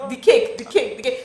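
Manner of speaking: play-acted shouting of one word, repeated on loop. Retelling falling in a hole with a cake: imitating someone shouting. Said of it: "you're shouting".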